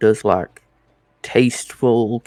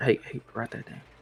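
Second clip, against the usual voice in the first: hushed, barely voiced, very quiet breathy whisper; 13 dB quieter than usual. Voicing a character nudging a companion to note something: whispering in character. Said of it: "lean over and whisper".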